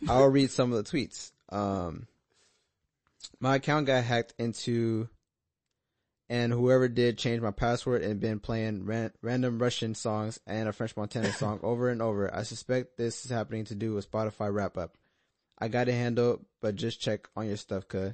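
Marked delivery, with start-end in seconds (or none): none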